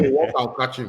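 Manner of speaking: ordinary talk, nothing marked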